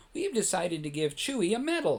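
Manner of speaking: plain reading voice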